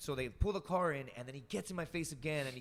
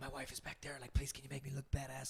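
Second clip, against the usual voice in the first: hushed, pleading half-whisper; 5 dB quieter than usual. Recounting what a man half-whispered after shaking his hand, retelling a half-whisper. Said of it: "And then he's like whispering".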